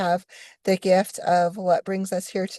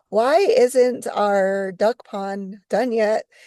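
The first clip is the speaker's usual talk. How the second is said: normal talking voice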